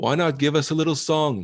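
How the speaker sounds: very high yell, ringing down from overhead. Voicing an unseen voice from above calling to the party: voice yelling from above. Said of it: "yell out to you".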